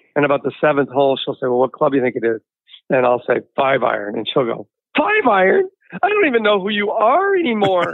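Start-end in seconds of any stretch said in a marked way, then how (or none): 5.0-8.0 acted, high, tearful speech broken up by crying. Retelling a golf-course fight with the speaker's wife, imitating wife crying while talking. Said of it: "She's crying".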